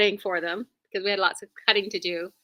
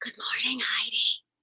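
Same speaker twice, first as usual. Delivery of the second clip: soft, hushed whisper; 2 semitones higher, 6 dB quieter than usual. Greeting a viewer while her husband is sleeping: whispering. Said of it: "I'm whispering because".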